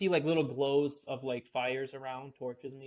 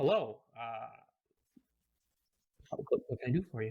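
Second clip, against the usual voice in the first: deep, gentle, easygoing voice. Retelling how a man answering the door greets the visitor, gentle but deep voice. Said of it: "with a, a gentle but deep voice".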